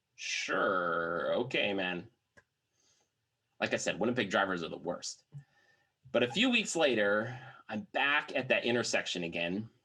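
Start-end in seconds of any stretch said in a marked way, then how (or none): 0.2-2.0 wary, doubtful, unconvinced, drawn-out "sure". Retelling the other driver's reply to the argument: imitating an unconvinced, careful reply. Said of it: "unconvinced, but carefully".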